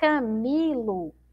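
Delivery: Camilo with long, heavy, drawn-out stress on mi. Teaching the strongest syllable in Camilo: stressed, lengthened 'mi'. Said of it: "Esse mi aqui é a que eu demoro mais tempo falando, ó".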